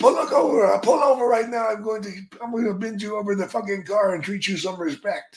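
put-on furious, snapping, angry outburst. Retelling a road trip when the companion suddenly snapped: imitating Iron Sheik snapping angrily. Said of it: "he just snapped".

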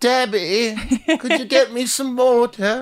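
very high, slow, stretched-out grandma voice. Imitating another speaker's grandmother asking for water: imitating a grandmother. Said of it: "Why would she talk like that?".

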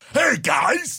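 cartoon robot voice, pitched way up high. Trying out a cartoon voice after a joke: Bender from Futurama voice. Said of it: "I'd rather sound like Bender from Futurama".

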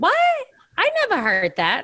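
very high, swooping voice. Retelling a talk with her mother, she gives her mom's reply: imitating her mother's voice. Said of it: "I use your voice".

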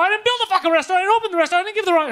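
acted, very high, shrill, loud, furious rant. Retelling a phone argument with a delivery driver: imitating an angry rant. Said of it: "so I'm just going crazy on him".

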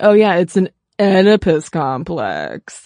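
heavy sarcasm in a swooping sing-song. Imagining how Freud might have said it: sarcastic Freud imitation. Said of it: "What if Freud had been sarcastic the whole time?".

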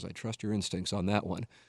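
low, soft, muttered mumble to himself. Speaker retells what the mayor of San Diego said to him, imitating someone mumbling. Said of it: "he mumbles to himself".

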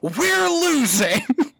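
loud, bellowing, booming voice. Quoting a favourite line reading from a character, retelling a bellow. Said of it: "And he bellows".

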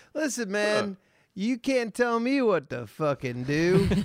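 very high, loud, drawn-out Southern drawl. Joking as a smoker in a bar who won't be told: put-on southern accent. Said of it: "but in the Southern accent".

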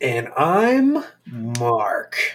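very slow, whale-like, drawn-out, stretched words. Giving a name in the podcast's opening introductions, talking very slowly. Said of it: "We're just talking very slowly".

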